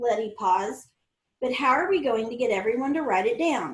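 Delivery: plain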